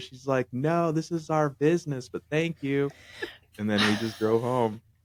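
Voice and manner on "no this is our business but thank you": high, loud yelled voice. Retelling her shouting out the bus window: imitating someone screaming. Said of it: "she screamed out the window".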